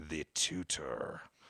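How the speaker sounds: dark, sinister, threatening and menacing delivery. Retelling a film scene where a gunman notices the tutor: sinister Picasso voice. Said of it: "in a sinister fucking way and says".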